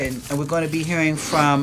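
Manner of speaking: ordinary talk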